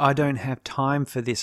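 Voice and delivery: ordinary talk, nothing marked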